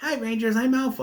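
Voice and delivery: very high, new fixed-up sidekick voice. Recapping an episode, showing how the character's repaired voice sounds: Alpha's new voice. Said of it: "it's not the same voice before".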